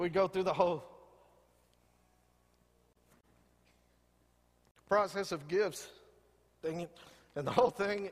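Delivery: choking up, teary, near-crying voice. Telling a Christmas morning story, choking up. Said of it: "I'm about to cry".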